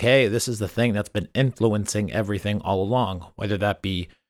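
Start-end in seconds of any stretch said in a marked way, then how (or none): none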